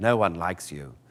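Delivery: low, soft, put-on proper English accent. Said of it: "I went with K two S O, who's more proper".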